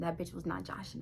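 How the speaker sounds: hushed, whispered aside.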